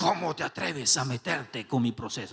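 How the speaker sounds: changed, possessed-sounding demon voice. Retelling their own reaction to someone meddling with their process, in an Exorcist-style possessed voice. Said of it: "cambiando la voz tipo el exorcista".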